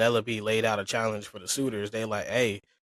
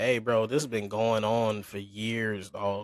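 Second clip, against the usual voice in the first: plain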